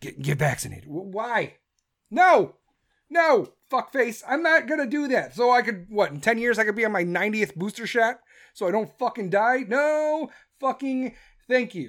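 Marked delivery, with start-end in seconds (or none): 0.0-0.8 quiet, half-whispered voice. Retelling how the president urged people to get vaccinated: imitating someone half-whispering. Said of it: "And he whispers".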